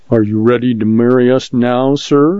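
ordinary delivery, nothing marked

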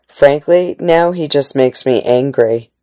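ordinary delivery, nothing marked

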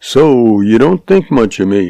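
plain

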